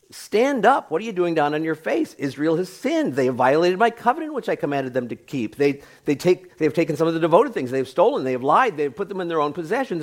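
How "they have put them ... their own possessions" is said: ordinary talk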